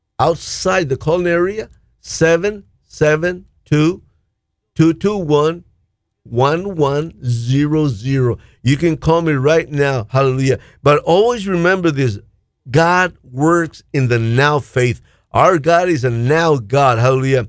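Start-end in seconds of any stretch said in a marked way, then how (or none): 2.0-8.4 slow, deliberate reading, each digit spaced out. Repeating the phone number for callers outside the calling area, said slowly. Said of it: "I'll say it slowly".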